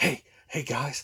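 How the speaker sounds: hushed, soft, secretive whisper. Describing a man filming himself on his phone, imitating someone whispering. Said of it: "like he's like whispering and stuff".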